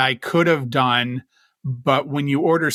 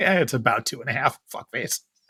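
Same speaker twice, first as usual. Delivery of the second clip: mock condescending tone, quieter; 4 dB quieter than usual. Imitating the other speaker's answer about inches: mock condescending tone. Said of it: "You said that so condescendingly".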